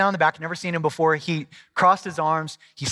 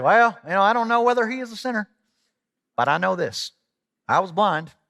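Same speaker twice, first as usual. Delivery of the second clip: put-on rural American country accent; 4 semitones higher than usual. Imagining a man from a Bible verse saying this, in a country accent. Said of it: "I just imagine this guy saying this with a country accent".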